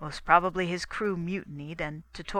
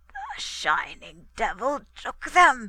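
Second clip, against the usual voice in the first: raised, croaking voice; 6 semitones higher, 5 dB louder than usual. Narrator reads a drugged man's reply when asked where his family is, croaking. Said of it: "he croaked".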